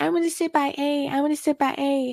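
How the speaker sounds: high, babyish put-on little-kid voice. Mimicking how a woman would literally talk, in a baby voice. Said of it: "In a baby voice and talk like that".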